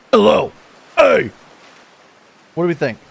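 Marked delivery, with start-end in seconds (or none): 0.1-1.3 newly tried voice, raised and pitched up. Testing a second voice for the character Trapper: a little deeper voice. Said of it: "Or is it a little deeper?".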